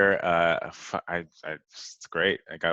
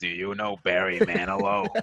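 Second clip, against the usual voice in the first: put-on swooping, older woman's voice; 3 semitones higher than usual. Retelling what a sixty-five-year-old woman on the sidewalk said: imitating an older woman's voice. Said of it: "walking around the apartment going".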